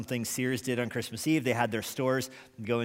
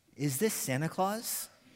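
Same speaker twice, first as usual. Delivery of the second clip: put-on tiny, small, high, trembling, quivering little voice; 5 semitones higher than usual. Retelling a caller's question to a colonel on the phone, small quivering voice. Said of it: "a small, quivering voice that asked".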